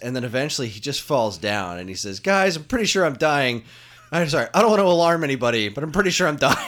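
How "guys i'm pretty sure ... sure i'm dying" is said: put-on winded character voice, higher and louder. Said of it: "Goku's getting more and more winded".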